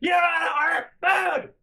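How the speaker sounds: put-on, shrill, very high shout. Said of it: "my mom's still yelling at me".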